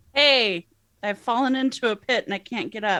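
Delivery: halfling character voice. Voicing a character warning friends about a pit: Dink calling out a warning. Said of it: "calls out to his friends a warning about the pit. It sounds like this".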